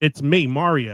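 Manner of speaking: put-on thick, laid-on Italian accent. Show listeners how the film's lead sounds, doing Chris Pratt's Mario Italian accent. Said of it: "let me do Chris Pratt's Mario Italian accent for you".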